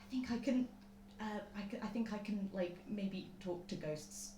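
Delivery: theatrical stage whisper. Playing a character hesitantly admitting something: stage whisper. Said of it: "Lucia's gonna go to a stage whisper".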